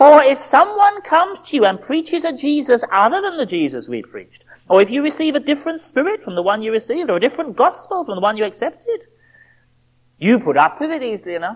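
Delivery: fast, sarcastic, laid-on tone. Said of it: "Do you hear the sarcasm coming back into his voice".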